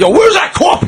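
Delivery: screaming, pitched very high. Imagining a newspaper editor in old movies: imitating an editor screaming. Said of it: "just screaming".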